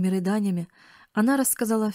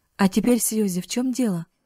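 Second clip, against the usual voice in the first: plain reading voice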